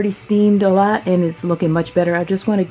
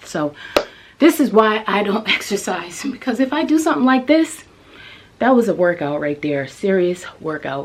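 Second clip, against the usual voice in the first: winded, gasping between words; 2 semitones higher than usual. After carrying something up from the basement, talking while out of breath. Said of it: "now let me catch my breath".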